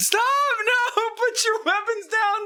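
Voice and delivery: very high, quavering, wobbly king voice. Narrating to the players, the speaker voices the king in the cavern: wobbly king's voice. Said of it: "the king's wobbly voice echoing through the cavern".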